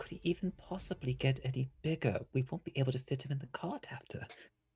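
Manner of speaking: quietly mumbling and muttering under the breath. Voicing a character grumbling about a friend's growth: mumbling under his breath. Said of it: "Christopher's just mumbling under his breath".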